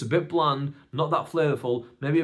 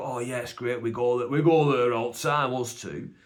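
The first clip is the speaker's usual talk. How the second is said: put-on Bradford accent; 2 semitones lower than usual. Retelling the boys recommending a burger place, imitating Bobby and Cash's accent. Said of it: "And that's their accent".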